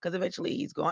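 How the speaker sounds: voice cracking and breaking mid-sentence. Speaker talking about Mike and his mom, voice cracking. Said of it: "excuse me, my voice is cracking".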